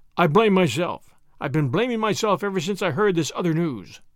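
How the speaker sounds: ordinary delivery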